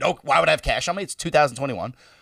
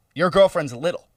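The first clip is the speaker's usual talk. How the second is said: plain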